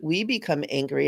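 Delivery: ordinary delivery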